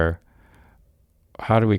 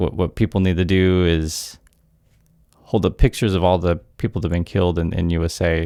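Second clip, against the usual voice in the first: ordinary delivery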